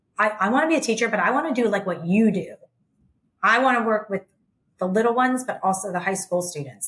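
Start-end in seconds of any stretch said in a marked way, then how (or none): none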